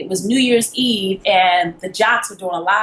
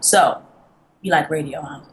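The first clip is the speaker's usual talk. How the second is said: put-on flat stoic monotone, lower; 4 semitones lower than usual. Retelling what the man said in his office: imitating a stoic monotone voice. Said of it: "real stoic and really monotone".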